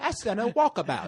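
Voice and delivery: half-hearted put-on British accent. Joking along with the other speaker: bad put-on British accent. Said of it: "Walkabout ain't even British".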